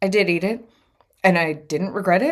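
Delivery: ordinary talk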